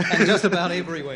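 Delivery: loud, mock commercial announcer style delivery.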